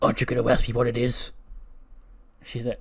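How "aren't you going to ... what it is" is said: growled, louder voice. Retelling a conversation, quoting what a man said: retelling a growl. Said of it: "he just sort of growls".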